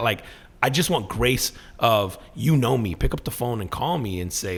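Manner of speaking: usual speaking voice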